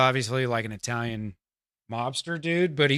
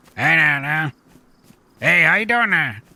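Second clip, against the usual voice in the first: put-on loud Louisiana Cajun accent; 3 semitones higher, 8 dB louder than usual. Voicing a character from Louisiana: Cajun accent. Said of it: "He's like he's like Cajun".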